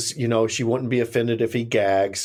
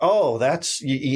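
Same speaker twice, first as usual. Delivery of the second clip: put-on drunken man's speech, pitched higher; 3 semitones higher than usual. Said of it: "you can tell he's, like, drunk".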